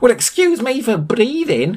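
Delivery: shrill, high-pitched yelling. In a read story, Sam snaps back at his companion: yelling. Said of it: "yelled Sam".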